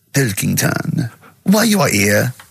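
put-on French-accented voice. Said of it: "I don't know why he's French".

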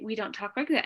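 plain

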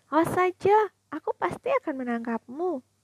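shrill, loud, annoyed, sulky scream. Kazuki yells after Ichi, who teased and ran off, loud scream. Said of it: "Kazuki menjerit keras".

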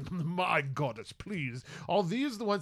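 sniffy, condescending, very haughty scoffing disdain. Recounting a scene, voicing a ghost addressing their goddess, in a mock-haughty scoff. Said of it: "in a very haughty tone, sort of scoff and say".

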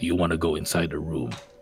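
hushed, very low half-whisper. Showing how they half-whisper the question to him, half-whisper. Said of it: "but I am whispering it".

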